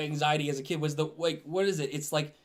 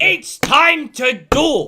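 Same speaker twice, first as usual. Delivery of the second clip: very loud, shrill comic voice; 10 semitones higher, 12 dB louder than usual. Showing how his Yu-Gi-Oh! voice would sound: Gilbert Gottfried voice. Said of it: "Gilbert Gottfried, yeah".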